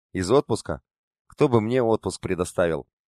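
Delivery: ordinary delivery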